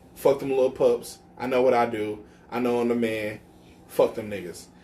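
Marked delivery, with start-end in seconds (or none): none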